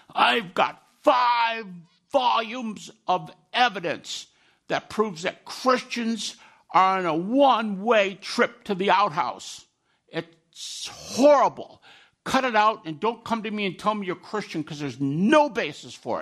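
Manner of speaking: harsh, gravelly, slow delivery. Retelling the first words he heard from a man who hated Christianity, imitating a harsh, gravelly voice. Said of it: "he speaks real harshly".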